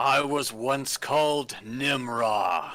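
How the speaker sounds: huge, booming creature voice, a word stretched. Narrator voices the creature answering a player's question, in Nimra's booming voice. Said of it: "booming voice".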